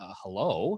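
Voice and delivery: put-on groggy, sleepy-sounding voice. Retelling answering a phone call in the dark, retelling a groggy hello. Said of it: "I was very groggy and I said".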